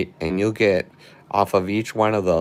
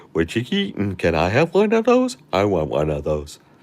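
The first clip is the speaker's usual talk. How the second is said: animated, swooping golden retriever talking-dog voice. Speaker voicing their golden retriever Joni, Joni voice. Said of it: "my golden retriever Joni would be like".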